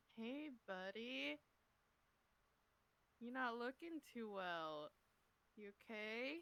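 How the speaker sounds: very quiet, hushed, soft, gentle murmur. Player's character Tony asking an unwell companion if he's okay, very quiet. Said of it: "is just gonna very quietly go".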